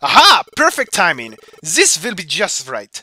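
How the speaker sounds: put-on German accent. Speaker stuck behind an enormous rock finds a way through, in a german accent. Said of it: "I apologize to everyone from Germany".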